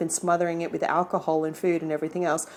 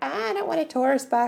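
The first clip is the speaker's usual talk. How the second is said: high-pitched, grumbling, put-on voice. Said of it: "there's a few of you that are like".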